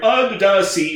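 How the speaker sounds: put-on Jamaican accent, crab character voice. Showing how the crab must talk in the remake: Sebastian the Crab Jamaican accent. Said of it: "with a sweet Jamaican beat".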